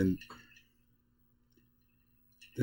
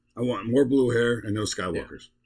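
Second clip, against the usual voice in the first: ordinary talk, nothing marked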